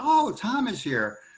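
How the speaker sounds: put-on snooty, high-pitched Southern aristocratic accent. Retell what Miss Audrey said as she came in, in Miss Audrey's arrogant Southern aristocratic accent. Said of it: "a very arrogant Southern aristocratic accent".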